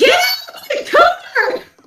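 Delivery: play-acted very high, stretched-out shriek. Retelling how the mom screamed during a shared game: imitating a scream. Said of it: "and she screams".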